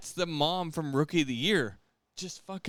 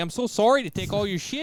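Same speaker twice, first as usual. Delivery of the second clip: joking put-on North Dakota accent; 4 semitones higher, 5 dB louder than usual. Joking with friends about how you rob in North Dakota, in a mock North Dakota accent. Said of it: "This is how you rob in North Dakota".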